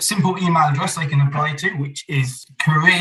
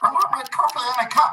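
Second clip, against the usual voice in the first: very high-pitched felt-puppet voice; 9 semitones higher than usual. Answering a question about coffee when asked for a Muppet voice. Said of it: "Using a Muppet's voice".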